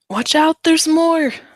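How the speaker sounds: loud, very high-pitched shouted yell. Voicing a character clinging to a branch, yelling down to companions: yelling down a warning. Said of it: "she's just gonna yell down".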